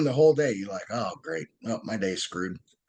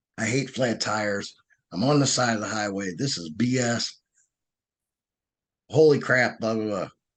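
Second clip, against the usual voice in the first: normal talking voice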